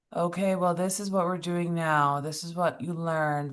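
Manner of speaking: droning, flat, by-the-numbers monotone. Imitating someone leading a call, mock-monotone speaker. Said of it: "Very monotone".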